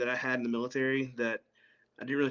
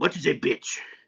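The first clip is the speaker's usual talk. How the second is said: put-on rough-edged, gruff, heavyset old man's voice. Retelling what a short, heavy old man asked him, in a gruff old man voice. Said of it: "kind of gruff voice".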